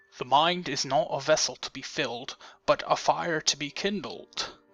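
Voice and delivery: soft, put-on British accent. Reading a quote found under a man's selfie, in a British accent impression. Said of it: "that was my British impression".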